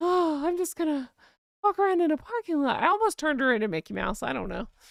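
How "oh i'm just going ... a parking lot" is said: high, nearly cartoonish fake feminine voice. Unable to do her accent, speaker acts out her line in a faux feminine voice. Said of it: "so I just put on this faux feminine like".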